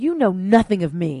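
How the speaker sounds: enraged, loud, furious shout. Reading a story, a character answers an accusation, shouted. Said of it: "shouted Destiny".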